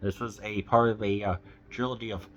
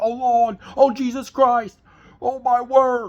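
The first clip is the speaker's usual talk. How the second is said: very high, loud, shrieking, very British cries; 9 dB louder than usual. Describing a film's last scene, quoting Howie being taken upwards, in Howie's very British accent. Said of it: "one of the most British accents of all time".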